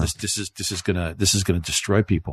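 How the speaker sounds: ordinary delivery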